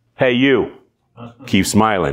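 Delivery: New York Brooklyn accent. Demonstrating a slogan for a listener who likes accents, brooklyn accent. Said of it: "Brooklyn, since you like accents".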